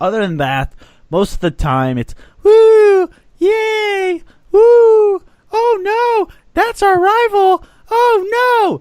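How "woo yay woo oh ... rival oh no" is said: put-on very high, very slow, childish kiddie cheering. Speaker imitates casual sports fans reacting to a rival, in a high-pitched voice. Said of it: "Why the high pitched voice?".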